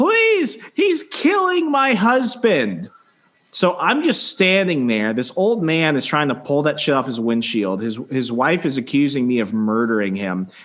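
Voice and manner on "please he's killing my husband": very high, swooping, stretched-out, drawn-out shriek. Speaker retelling what a wife screamed while her husband was growling at him, retelling a woman screaming. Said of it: "she starts screaming is".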